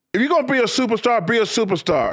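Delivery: very high, scolding coach-style yell. Retelling how his coach screamed at him in front of the team: retelling a coach's yelling. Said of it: "And he keeps going".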